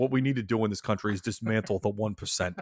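loose, rough put-on politician voice. Joking about fantasy football players as the one percent: Bernie voice. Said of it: "I stopped doing the voice 'cause I realized that didn't sound anything like Bernie".

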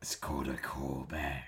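deep, slow dragon voice. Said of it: "Was that your dragon voice?".

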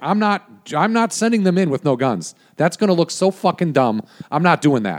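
acted heated argument voice. Recounting an argument with a couple of execs, the speaker re-enacts heated arguing. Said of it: "in like a heated argument".

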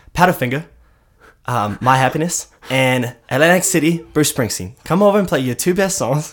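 put-on high Australian-accented voice. Retelling what a man said to the band, in an Australian accent. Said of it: "And he said this in uh, Australian accents".

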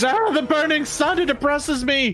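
screaming. A game master voicing a drow caught by the flame, screaming. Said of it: "As he screams".

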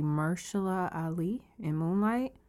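very slow, deliberate delivery, every word laid out. Making a point about the Oscars to the other speaker, saying a name slowly. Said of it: "I'm going to say this slowly".

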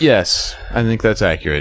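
stiff, mechanical, robot-like delivery. Answering another speaker's question with a short agreement, in a robotic monotone. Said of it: "You sounded like a robot".

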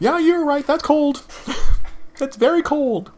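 startled yelp.

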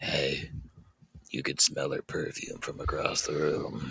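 soft, close ASMR-style whisper right into the ear. Whispering the line into his ear, real close, asmr whisper. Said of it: "Because why not ASMR?".

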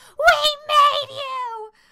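high, slow crying scream. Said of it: "keeps running outside to where the trucks are and screaming".

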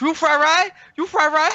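put-on broken-English shouting. Retelling someone yelling during a video game to be saved: imitating yelling in Chinese-accented broken English. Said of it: "a Chinese dude just yelling in my ear, telling me to save him in broken English".

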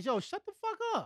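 high-pitched yelling. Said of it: "One time I yelled".

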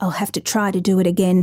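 ordinary delivery

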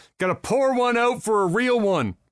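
ordinary delivery

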